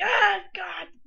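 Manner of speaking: shrill, loud, high-pitched screaming cry. Imagining a girl who fell in the game: imitating someone screaming. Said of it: "screaming at her house right now".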